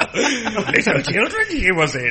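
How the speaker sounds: playful, animated character voice with pitch swooping all over. Chatting about an actress's films, a panelist asks a question in a Yoda voice. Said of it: "That was a Yoda impression".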